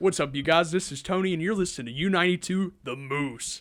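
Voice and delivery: on-air announcer delivery. A speaker demonstrates the station ID he says on the radio, in his radio ad voice. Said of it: "I have my radio ad voice".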